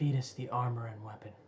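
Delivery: soft, close-in half-whisper. Voicing a mysterious voice half-whispering into a player's ear: half-whisper. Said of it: "you hear a whisper in your ear".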